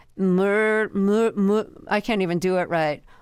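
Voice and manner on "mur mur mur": overdone, heavy Philadelphia accent on "mur". Describing a show's premise, attempting an exaggerated philadelphia accent. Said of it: "overly exaggerated Philadelphia accents".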